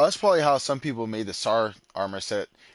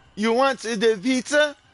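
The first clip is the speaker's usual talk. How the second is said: very high, slow, put-on Italian accent; 4 dB louder than usual. Offering someone a pizza, in an italian accent. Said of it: "That was my Italian accent".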